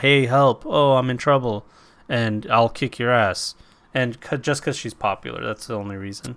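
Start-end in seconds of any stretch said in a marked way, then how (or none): 0.0-3.5 flat monotone delivery throughout. Mocking an actress's acting, the speaker imitates her: Ronda Rousey monotone impression. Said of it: "It's monotone. It's the same voice for".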